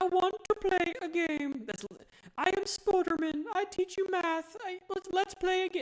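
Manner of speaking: very high, squeaky, derpy creepy-puppet voice. Describing a voice they found hilarious and creepy, then imitating it: Spoderman-meets-Billy-the-Puppet voice. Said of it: "it sounds like Spoderman".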